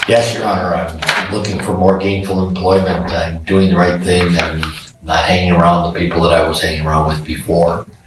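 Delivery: ordinary talk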